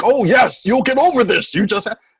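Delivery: high, loud, over-the-top cheerful tone. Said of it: "that is a little over the top".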